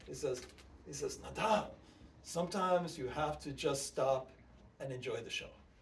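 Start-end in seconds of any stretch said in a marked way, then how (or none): 1.2-5.5 put-on thick, laid-on Romanian accent. Quoting a Romanian friend's advice, thick Romanian accent. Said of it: "He has a very thick accent 'cause he's".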